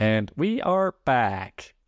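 slow put-on voice, each word drawn out. Announcing a return after an ad read: Stephen Hawking voice. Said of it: "that was my Stephen Hawking voice".

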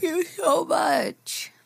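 talking through a yawn. Thanking the letter writer for kind words, yawning while talking. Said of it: "Sorry, I was yawning".

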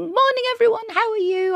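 very high, annoyingly chirpy, chirping voice. Retelling bouncing in to greet the crew of a TV commercial: mock annoyingly chirpy greeting. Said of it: "I'm quite annoyingly chirping".

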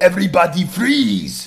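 loud, swooping put-on Austrian accent. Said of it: "keep the accent and go".

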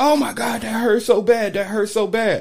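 mock high, pained screaming. Retelling how a woman reacted, the speaker imitates her screaming. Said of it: "She immediately started yelling".

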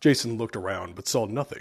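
plain reading voice

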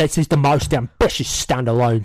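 put-on London Cockney accent. Trying a line again in different accents: Cockney accent. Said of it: "Or can I do it Cockney?".

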